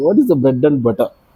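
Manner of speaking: ordinary talk, nothing marked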